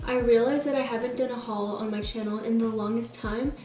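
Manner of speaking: plain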